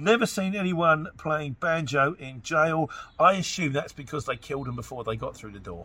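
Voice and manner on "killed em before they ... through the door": ordinary talk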